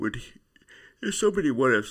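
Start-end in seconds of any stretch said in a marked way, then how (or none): 1.0-1.9 yawning while speaking, much higher and louder. A speaker, mid-discussion, talks through a yawn and apologizes for it. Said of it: "sorry, I'm yawning".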